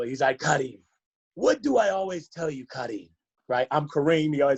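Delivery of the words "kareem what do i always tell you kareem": put-on speech with a Nigerian English accent. Retelling what Mister Appa would say to Kareem after games, imitating Mister Appa's accent. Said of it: "I'm going to do the little accent".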